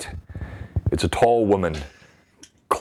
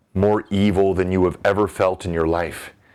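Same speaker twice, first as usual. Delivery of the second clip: ordinary talk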